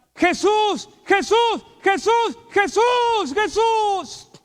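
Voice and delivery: acted, shrill, full-throated, very high, loud repeated shouting. Speaker retelling how a person being prayed for suddenly began shouting: retelling a shout. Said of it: "Empieza a gritar".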